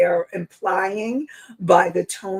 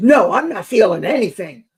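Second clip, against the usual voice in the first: loud, play-acted angry, defensive tone; 5 dB louder than usual. Speaker demonstrates how someone might deny feeling anything, angry denial. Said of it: "that sounds like really angry to me".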